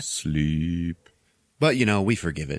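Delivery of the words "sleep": low, droning, hypnotic speaker voice. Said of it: "this voice going".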